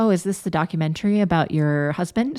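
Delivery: mock playful, cheeky, teasing jab. Retelling what a friend said: imitating a cheeky friend. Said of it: "very cheekily said".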